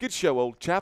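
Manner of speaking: put-on British accent. Reading out a viewer's phrase, trying the accent: put-on british accent. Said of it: "Helps with the accent".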